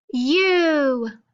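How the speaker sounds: loud, popped, bright, drawn-out U vowel. Leading a listener through an alphabet warm-up, saying vowels loud and popping up. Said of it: "say them loud and pop up".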